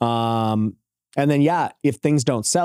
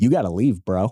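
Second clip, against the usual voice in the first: self-assured, confident voice; 2 semitones lower than usual. Retelling ordering strangers out of a house, retelling a loud confident voice. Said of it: "tried to get my loud voice and I, my confident voice".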